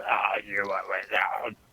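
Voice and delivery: burbling, gargled, gurgly monster voice. Voicing a creature asking a player character a question: gurgly creature voice. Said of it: "in that same, like, gurgly".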